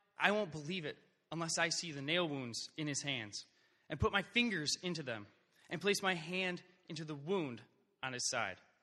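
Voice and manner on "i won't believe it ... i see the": usual speaking voice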